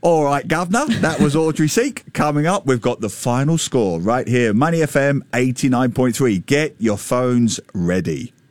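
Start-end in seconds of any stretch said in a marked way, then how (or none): 0.0-0.9 put-on Cockney accent. Showing the co-host how her football references sound: Cockney Oliver Twist voice. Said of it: "in a Cockney Oliver Twist".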